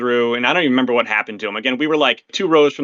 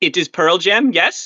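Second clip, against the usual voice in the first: put-on French Canadian accent, high and slow; 6 semitones higher than usual. Retelling what a concert-goer said: imitating a french canadian accent. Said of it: "I think it was a French Canadian accent".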